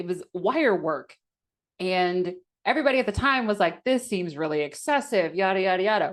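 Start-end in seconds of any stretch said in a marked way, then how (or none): none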